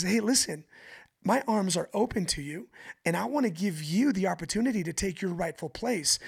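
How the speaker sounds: ordinary delivery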